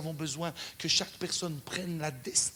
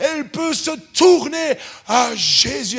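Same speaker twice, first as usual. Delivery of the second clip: put-on big booming voice, higher and louder; 9 semitones higher, 16 dB louder than usual. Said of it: "avec sa grosse voix comme ça".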